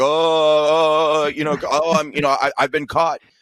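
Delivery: flailing stammer, dragging out each oh. Describing a bit someone does mocking people caught lying: imitating Donald Trump's flailing bit. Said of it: "this bit he does where he's like".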